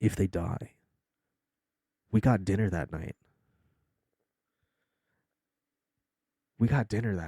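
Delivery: low, hushed, secretive stage whisper. While greeting a new follower on stream, half-whispering. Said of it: "I'm whispering this so that way".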